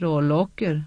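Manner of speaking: low muttering. Mert answers Evienda's question, muttered. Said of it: "muttrade Mert".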